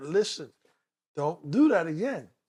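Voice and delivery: ordinary talk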